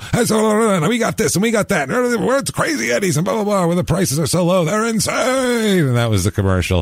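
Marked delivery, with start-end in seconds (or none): 0.1-5.9 put-on, very high screaming pitchman hard sell. Retelling an old TV commercial: imitating the Crazy Eddie ad yelling. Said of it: "scream and yell into the fucking camera".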